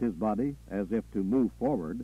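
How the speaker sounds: ordinary delivery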